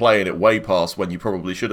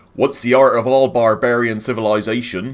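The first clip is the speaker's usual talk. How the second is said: dwarf narrator voice in West Country accent; 3 semitones higher than usual. Reading a location description as a dwarf, in a West Country accent. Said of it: "in the voice of a West Country person, as if there was a dwarf".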